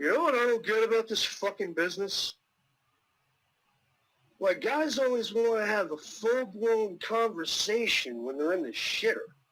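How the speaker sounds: booming all-around voice. Retelling a voice from a bathroom stall: booming voice like oz. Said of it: "you hear this voice coming from all directions, like Oz".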